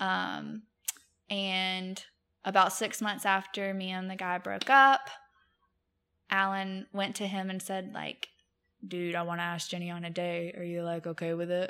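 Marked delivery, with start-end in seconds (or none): 8.9-11.7 level, flat, expressionless monotone delivery. Recounting how your husband asked a friend about dating you, do a monotone Alan impression. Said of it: "Just monotone".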